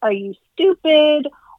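sarcastic tone.

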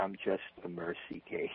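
slow, unhurried, very soft and quiet delivery. Quoting a man's reply to your question, retelling it in his slow voice. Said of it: "in his slow voice".

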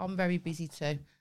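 ordinary delivery

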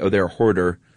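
normal talking voice

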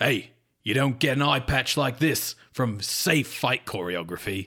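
put-on rough London dockside accent. Podcaster acts out Larry answering another actor about fight safety: Larry in London docks accent. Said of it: "London, like, docks accent".

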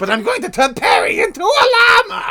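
very high, loud, swooping cartoon voice. Playing the villain of Emperor's New Groove: Doofenshmirtz voice. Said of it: "I know, Doofenshmirtz".

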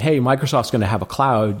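ordinary talk

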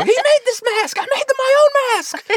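very high, very loud tantrum. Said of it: "freaking out like Will Ferrell at the end of Zoolander".

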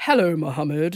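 self-assured, imposing voice. Retelling how Jacob greeted a child, imitating Jacob's voice. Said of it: "that's me trying to do your voice".

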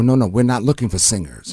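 plain

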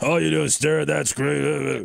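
put-on rough, creaky, rasping grandfather voice. In conversation, the speaker quotes his grandfather, imitating his grandfather. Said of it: "sounding like my grandfather".

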